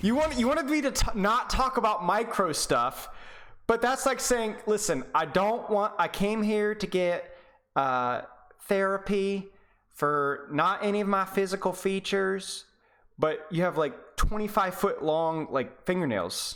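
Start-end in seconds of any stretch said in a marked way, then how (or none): 4.7-16.6 put-on Southern female accent. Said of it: "I used a Southern female accent there".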